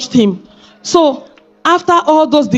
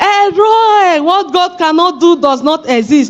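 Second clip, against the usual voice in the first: slow, stretched, drawn-out, mild exclamation; 4 semitones higher than usual. Retelling the moment of hearing the baby's result: retelling a shout. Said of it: "I started shouting".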